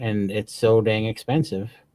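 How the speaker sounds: normal talking voice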